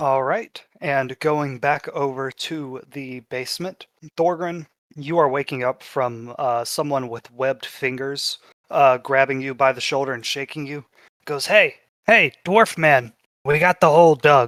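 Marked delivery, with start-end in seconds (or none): 11.4-14.5 words quacked out in a quacking voice. Narrating a game scene to Thorgrin, the speaker voices a duck person: Donald Duck voice. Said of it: "the duck person who talks like Donald Duck".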